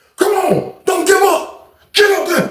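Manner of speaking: very high, unhinged, wild drill-sergeant screaming. Retelling a man standing over someone struggling with push-ups, imitating a screaming drill sergeant. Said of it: "screaming like a psycho".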